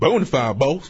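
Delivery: put-on Southern accent. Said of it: "That was Southern for me".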